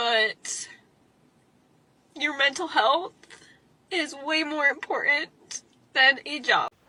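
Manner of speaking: talking through tears. Speaker trying to get through talking without crying, crying while talking. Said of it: "Try to do this without crying, but it's not working".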